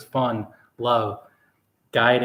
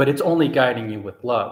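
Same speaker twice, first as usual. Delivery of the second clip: ordinary talk, nothing marked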